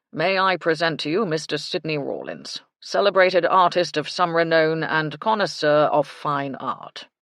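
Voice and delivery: loud, self-important, grandiose, pompous announcer-style voice. Mister Baxter introduces the artist to Missus Carter-Holmes, Mister Baxter's pompous voice. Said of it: "Mister Baxter said in his pompous voice".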